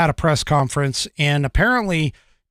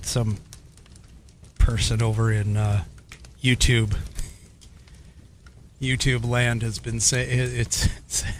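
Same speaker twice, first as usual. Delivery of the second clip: words broken up by laughter while talking; 5 semitones lower, 6 dB quieter than usual. Starting to mention a YouTube comment, laughing while talking. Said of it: "I'm laughing".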